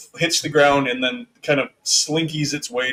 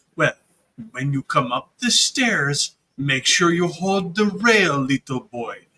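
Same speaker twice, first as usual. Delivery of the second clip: put-on condescending, talking down as to a child. Voicing a character heading up the stairs ahead of a player: talking down as if to a child. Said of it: "like he's talking to a child".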